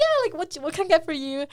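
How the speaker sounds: voice lifted in pitch. Acting out asking a customer for their order, imitating voice going up. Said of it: "your voice goes up".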